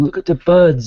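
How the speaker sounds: toddler's put-on New York accent on birds. Retelling a two-year-old's words on a spring trip up north; toddler's New York accent. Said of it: "like a New York accent".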